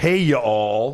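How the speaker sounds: put-on Dallas y'all accent. Reading out a posted message from the Country Evil duo: Dallas y'all accent. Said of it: "we do our like y'all accent. It's very Dallas".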